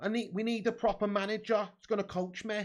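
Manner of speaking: put-on Manchester accent. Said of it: "Manchester accent".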